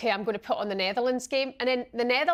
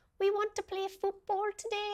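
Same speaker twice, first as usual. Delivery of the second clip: bad, way-off put-on Welsh accent, pitched up; 9 semitones higher, 6 dB quieter than usual. Imitating little girls at a school in wales: bad welsh accent. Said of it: "I don't know what that accent was".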